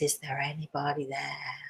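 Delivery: very quiet, low, almost eerie spooky hush. Showing how he had a seated group say it, soft spooky voice. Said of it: "in this like soft, sort of almost spooky voice".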